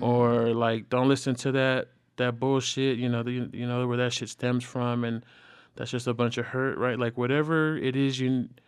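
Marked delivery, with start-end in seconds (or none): none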